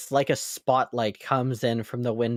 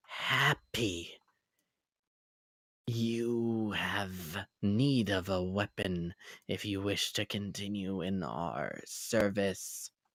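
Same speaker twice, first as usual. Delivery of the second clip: soft, slow glitching stutter with "you" stretched out; 4 semitones lower, 9 dB quieter than usual. A game master voices a disembodied voice addressing an unarmed player character, stuttering, glitched voice. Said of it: "the voice is stuttering and glitched".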